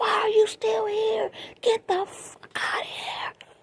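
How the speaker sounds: shrill, high screaming rage. Telling how a man stayed on her couch, retelling her scream. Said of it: "I was screaming at him".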